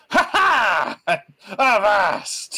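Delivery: manic, crazed, swooping, very high-pitched shriek. Voicing a character who shouts before taking a shot: crazed shriek. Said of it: "a crazed, like, shriek".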